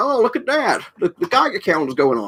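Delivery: deliberately awful voice, high, swooping, sing-song. Describing a photo of John Wayne with his kids: awful John Wayne impression. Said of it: "probably an awful John Wayne impression".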